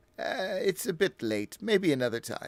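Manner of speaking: put-on slow, unhurried, high-pitched old man voice. Voicing an older man who answers a player with a smile: voicing an older man. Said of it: "the older man you're speaking to".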